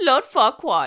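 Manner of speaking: put-on loud German accent. Quoting a movie line often said aloud, in a German-accented Three Little Pigs impression. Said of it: "one of the three little pigs who are apparently German".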